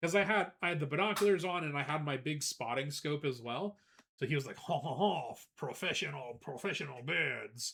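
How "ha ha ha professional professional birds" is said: put-on French accent, male voice, English. Retelling what a visitor said about bird watching: imitating a French man's voice. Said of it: "This guy kinda did sound like that".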